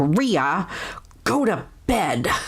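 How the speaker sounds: slow, mock stern voice. Retelling how he tells her to go to bed, the speaker imitates his stern voice. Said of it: "he says it in a more stern vo- voice".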